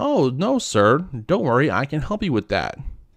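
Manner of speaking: very peppy, chirpy, sing-song customer-service voice. Retelling a reply to a man while getting over a bad cold: put-on chirpiest voice. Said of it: "In my chirpiest voice".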